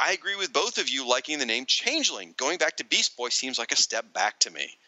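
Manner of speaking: plain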